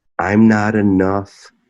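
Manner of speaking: ordinary talk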